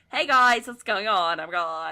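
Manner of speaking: put-on effeminate podcaster voice. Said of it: "he just sounds like the most like stereotypical Gabe guy ever".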